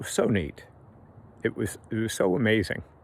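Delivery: choked-up voice catching with emotion. Telling about going to a friend's funeral, getting choked up. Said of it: "I'm gonna get choked up".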